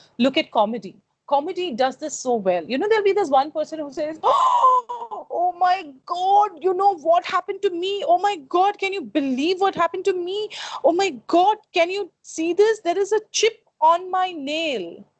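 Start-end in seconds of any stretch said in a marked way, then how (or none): 4.2-15.0 mock frantic shouting and screaming, high, shrieking panic. Explaining tone versus mood through comedy, speaker mimics one person, mimicking shouting and screaming. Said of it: "you're shouting and screaming like this".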